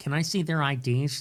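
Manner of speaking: put-on nerdy voice. Acting out someone asking partygoers for their IDs, nerdy voice. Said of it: "He does that nerd voice so well".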